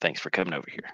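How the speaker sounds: quiet, soft, hushed whisper. Character thanking a companion for coming over to the table, in a soft, hushed voice. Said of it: "In a soft, hushed voice".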